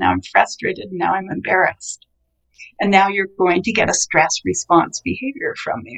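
plain

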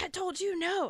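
very high, frantic, freaked-out scolding tone. Retelling how the mother reacted after the jump: imitating someone freaking out. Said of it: "she's, like, freaking out".

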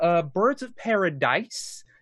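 "Paradise" with last syllable stressed, stretched and rising. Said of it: "I will always emphasize that last syllable".

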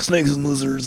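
big, macho character voice. Showing the others how Beetlejuice talks: Beetlejuice baritone voice. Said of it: "baritone mode and he's like".

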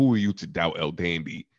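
put-on deadpan delivery. Retelling a wrestler's answer in an interview: imitating a deadpan delivery. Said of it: "the way he said it".

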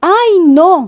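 high-pitched, meek, humble shout. The host responds to a threat, shouting humbly. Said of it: "gritó el anfitrión, completamente humilde".

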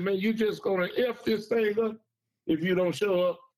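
urgent pleading tone. Retelling a gentleman calling back, urging a show-up: imitating an urgent pleading voice. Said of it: "in a very urgent voice and a pleading voice".

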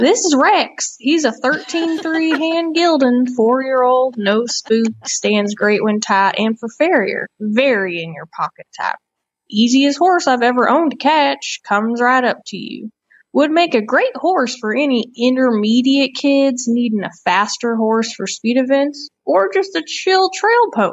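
put-on, attempted American Southern accent. Reading a Facebook horse-sale ad aloud, she tries a southern accent. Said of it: "I'll try to do a southern accent".

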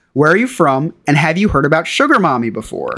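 ordinary delivery

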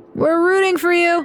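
put-on very high voice, words slurred together, drunken-sounding. Narrator reads a man's line to the runner Flora, slurred speech. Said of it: "the first man slurred".

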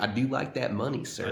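put-on snarky, sarcastic southern accent. Quoting Leo's performance in the Killers of the Flower Moon trailer, use Leo's snarky southern voice. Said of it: "in that little snarky southern voice".

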